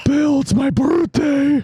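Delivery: creepy, spooky, very high-pitched ghost voice. Acting out a creepy ghost boy for the others: spooky ghost voice. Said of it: "You're so scary".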